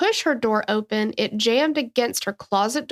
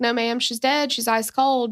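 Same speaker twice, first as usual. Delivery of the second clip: normal talking voice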